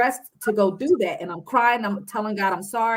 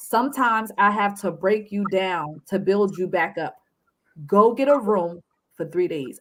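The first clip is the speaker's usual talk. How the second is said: mock, firm, laid-down delivery. Retelling what god said to them: retelling firm words. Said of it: "he said firmly to me".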